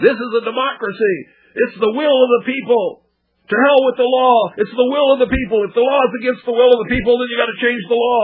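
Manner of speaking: put-on screaming rant, high, ranting yell. Speaker acts out a demonstrator yelling at a camera in West Palm Beach, imitating someone yelling. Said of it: "so he's just yelling".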